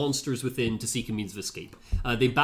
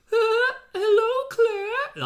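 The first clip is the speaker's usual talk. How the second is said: high, loud, half-laughing voice; 5 dB louder than usual. Describing a game villain greeting Claire over the speakers, Alfred Ashford impression. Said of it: "that's how he laughs and that's how he talks".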